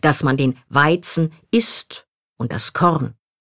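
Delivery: articles den and das clearly stressed.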